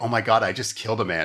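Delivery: ordinary delivery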